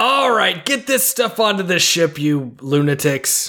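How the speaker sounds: high-pitched screaming voice. Calling out orders into a ship in character: screaming commands. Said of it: "start screaming commands".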